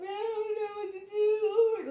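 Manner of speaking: acted, very high, slow, drawn-out tearful sobbing. Retelling how her daughter answered a request for help: imitating a crying daughter. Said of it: "she was literally crying".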